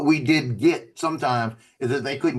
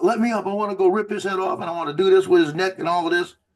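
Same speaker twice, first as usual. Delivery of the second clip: mock hot-headed, menacing male yelling, heated but held back; 5 semitones higher than usual. Recalling a man who turned around and started yelling again, imitating him yelling. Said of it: "starts screaming, yelling again".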